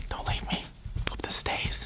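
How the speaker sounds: barely voiced, very soft whisper. Video host addresses his own facial hair mid-video, whispering to beard. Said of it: "[whispers to beard]".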